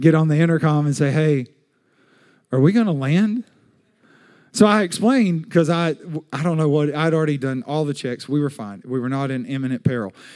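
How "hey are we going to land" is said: mock-timid, intimidated voice. Retelling a voice from behind him on the intercom mid-flight, imitating an intimidated voice. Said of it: "I hear this very intimidated voice".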